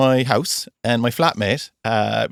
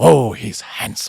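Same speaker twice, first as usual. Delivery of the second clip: imitated lovely old man's voice, much slower; 3 dB louder than usual. Retelling how a man greeted the speaker, imitating a lovely old man's voice. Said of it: "he's a lovely old boy's kind of voice".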